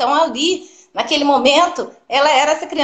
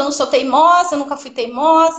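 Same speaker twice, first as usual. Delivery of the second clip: plain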